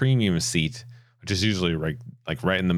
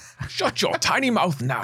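bad, very high put-on voice, missed attempt; 12 semitones higher than usual. Describing a show an actor appears in, attempting his line: failed Idris Elba impression. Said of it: "Crocodile Dundee".

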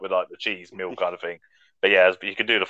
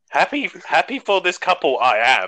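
playful put-on voice, pitched high and swooping; 8 semitones higher than usual. Imagining a best man speech at a wedding, Yoda voice. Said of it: "that would be hard in the Yoda voice".

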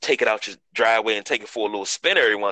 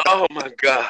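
talking through laughter, higher; 3 semitones higher, 3 dB louder than usual.

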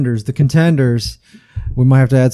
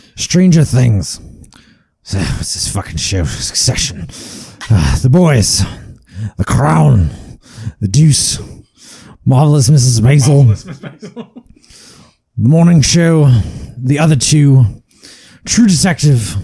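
put-on gruff, older-sounding voice with a Scottish accent. Reading a list of show titles on request: Brian Cox voice. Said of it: "My Brian Cox voice?".

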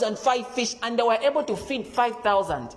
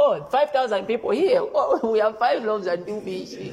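heavy mock sarcasm throughout, scoffing. Retelling the disciples' reply about feeding the crowd: imitating sarcastic disciples. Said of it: "They were being sarcastic".

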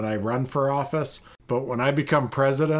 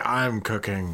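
mock whisper, lower pitch; 4 semitones lower than usual. Host mimics how the caller said he is cooking, mock whisper. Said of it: "why are you whispering that you're cooking?".

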